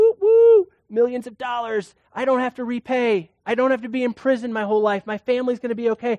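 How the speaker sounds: overjoyed, pumped, excited whooping cheer. Telling the parable, voicing the forgiven servant, acting out a rejoicing servant. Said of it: "he's rejoicing, he's pumped".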